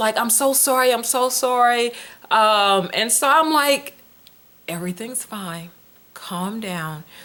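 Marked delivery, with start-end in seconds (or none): 0.2-1.9 flustered, frantic words pouring out, repeated. Retelling a mother's apology after missing daycare's calls, imitating a frantic mother. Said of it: "So she was frantic".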